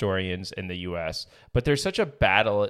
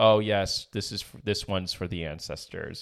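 plain

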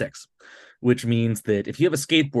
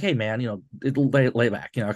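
plain

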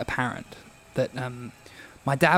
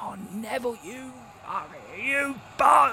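put-on scream of a man, much higher in pitch; 10 semitones higher than usual. Retelling how a man kept screaming at neville, imitating a man screaming. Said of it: "he was screaming".

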